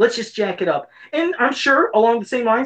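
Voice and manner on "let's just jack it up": ordinary talk, nothing marked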